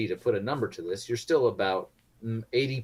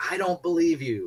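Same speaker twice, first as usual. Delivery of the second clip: high, manic, almost unhinged yell of disbelief; 9 semitones higher, 4 dB louder than usual. Game master voices a man shouting at a traveller passing through, manic shout. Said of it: "he shouts at you almost manically".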